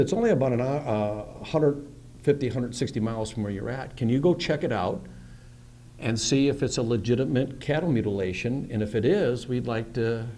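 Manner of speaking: ordinary talk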